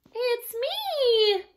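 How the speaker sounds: very high squealing little goat voice, me stretched out. A storyteller reads the troll tale aloud, voicing the littlest billy goat: Baby Gruff squealing. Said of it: "Baby Gruff squealed".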